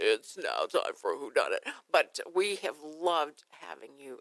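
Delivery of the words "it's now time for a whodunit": very low, deep, smooth, beautiful radio announcer voice. Showing a departing colleague how he sounds when he gets in there, imitating a beautiful radio voice. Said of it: "beautiful radio voice".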